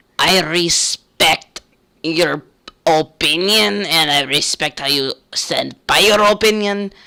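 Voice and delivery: rough, somewhat scratchy voice. Speaker retelling a guy's reply after being told to shut up, imitating his scratchy voice. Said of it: "That's literally what the guy sounded like".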